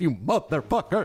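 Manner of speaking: mock unhinged broadcaster voice. Watching a video, the speaker mimics a woman's curse, imitating crazy announcer voice. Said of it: "I love how she does the announcer voice".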